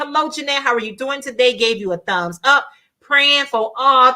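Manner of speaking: ordinary delivery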